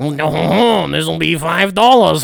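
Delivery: slow put-on French accent, drawn-out "no". Picturing a french person handing over the item, imitating a french person. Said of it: "a French person who touched it and was like".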